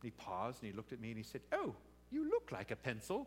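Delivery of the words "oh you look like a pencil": put-on high, sing-song Welsh accent of a small boy. Quoting a boy on his lap replying to Pennsylvania, little boy's Welsh voice. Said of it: "in his little Welsh voice".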